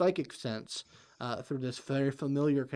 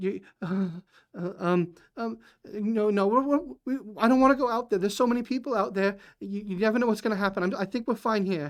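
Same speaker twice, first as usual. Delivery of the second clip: high, loud, frantic near-panic stammer; 8 semitones higher, 6 dB louder than usual. Voicing a mother refusing to go out: near panic. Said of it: "in a near panic state".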